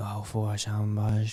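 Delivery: mimicked whisper. Retelling how a homeless man walked up to them, imitating a man's whisper. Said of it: "he's like whispering, going".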